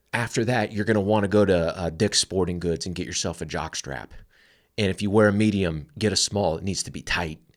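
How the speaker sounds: ordinary talk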